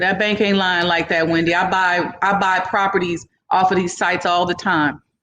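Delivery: ordinary talk, nothing marked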